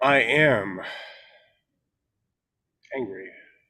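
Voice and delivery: three-beat pause before angry. Demonstrating an exercise line for someone repeating it: long pause before 'angry'. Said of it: "pause for like three beats after you say I am".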